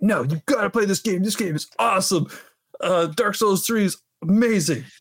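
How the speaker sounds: surfer-dude character voice. Recalling a friend urging him to play Dark Souls 3, in a Michelangelo-like voice. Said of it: "Why does your friend sound like Michelangelo from the Ninja Turtles?".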